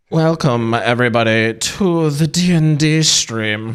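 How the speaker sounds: sultry, seductive, put-on German accent. Opening the D and D stream in character, in Cruella's German accent. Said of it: "I don't know why I sound like a German".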